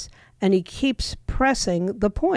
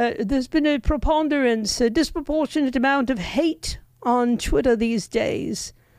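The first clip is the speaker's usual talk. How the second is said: put-on clumsy, poorly done British accent; 4 semitones higher than usual. Retelling what a man said to Elon Musk, in a bad British accent. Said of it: "I don't do a British accent very well".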